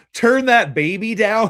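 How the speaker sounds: put-on drawn-out yell, loud and high. Retelling a movie scene where the dude yells: imitating someone yelling. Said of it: "And the dude yells".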